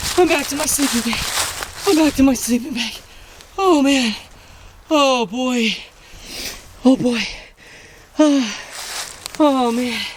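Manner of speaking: winded, heaving breaths between phrases. Hurrying back to the sleeping bag after a fright, out of breath. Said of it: "I have to catch my breath".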